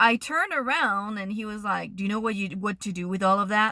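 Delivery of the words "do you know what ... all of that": put-on menacing, threatening voice, faster pace. Retelling what a man said after the speaker turned around, imitating a menacing man. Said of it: "really, like menacing, like threatening".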